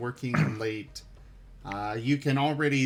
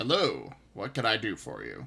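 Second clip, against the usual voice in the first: courteous, polite, animated fantasy dwarf voice; 4 semitones lower than usual. Greeting a player who came to buy a weapon enchant, in a polite dwarf voice. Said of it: "That's your that's your dwarf voice".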